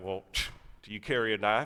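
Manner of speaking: put-on thick Southern accent. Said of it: "he has like a really thick Southern accent".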